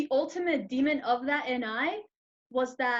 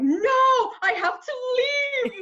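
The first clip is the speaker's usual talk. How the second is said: mock very high, sobbing, crying scream; 12 semitones higher, 6 dB louder than usual. Recounting freaking out and insisting on leaving, retelling own crying and screaming. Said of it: "I started crying, I started screaming".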